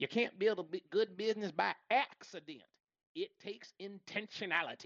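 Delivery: put-on Southern American accent. Quoting an author's line about building a business: Dave Ramsey Southern accent. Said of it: "He says in his Southern accent".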